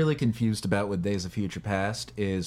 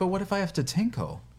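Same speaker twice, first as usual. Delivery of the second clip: mock sincere, very high, earnest delivery; 9 semitones higher than usual. Retelling how she delivers a line meant to be snarky: mimicking a genuine delivery. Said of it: "delivers it genuinely".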